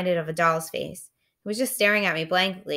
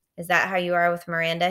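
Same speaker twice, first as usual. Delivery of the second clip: plain reading voice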